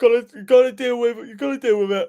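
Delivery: words stretched out through a loud yawn. A tired speaker, talking about a team's injured player, yawning while talking. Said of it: "Excuse me, I'm yawning".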